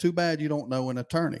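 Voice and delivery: ordinary talk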